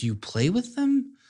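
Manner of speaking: mock puzzled tone, slow and high.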